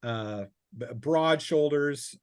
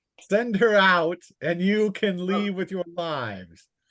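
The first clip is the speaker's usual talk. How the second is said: booming, bellowed, threatening call, pitched up; 6 semitones higher, 6 dB louder than usual. A voice calls out demands to the group, bellowing call. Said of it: "a bellowing voice that calls".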